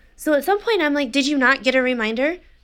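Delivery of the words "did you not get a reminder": curt, snippy, pointed tone. Retelling arguing with someone who ignored the reminder: imitating own snippy tone. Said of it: "I continue to be shitty".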